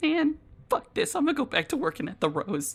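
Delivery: very high, hushed, grumbling mutter under the breath. Voicing a character walking away, muttered under breath. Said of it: "very much under their breath".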